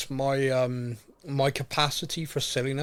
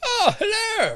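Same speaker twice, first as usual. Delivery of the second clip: fake posh accent, put-on, very high; 5 dB louder than usual. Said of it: "Posh person".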